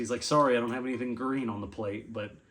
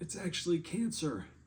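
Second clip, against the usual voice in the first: acted feeble, frail, weak voice, pitched up; 7 semitones higher, 4 dB quieter than usual. Retelling a man's joke from his hospital bed, imitating a weak voice. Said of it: "he says weakly through his voice".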